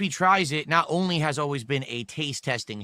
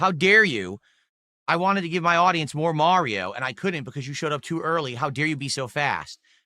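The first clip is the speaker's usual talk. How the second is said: ordinary talk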